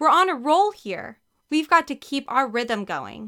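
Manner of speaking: shouting loudly. Mary-kate urges ashley on, yelling. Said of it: "Mary-Kate yelled".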